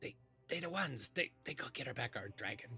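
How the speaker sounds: loud stage whisper, meant to be overheard. Meepo walks up and whispers to a kobold guard, in Meepo's loud stage whisper. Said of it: "he kind of whispers to the guard guard very loudly".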